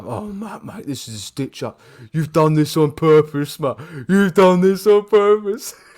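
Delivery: panting, winded, out-of-breath, puffed-out voice. Retelling a tired companion's complaint while climbing a hill: imitating Forrest out of breath. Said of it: "He was already out of breath".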